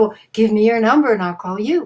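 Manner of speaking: ordinary delivery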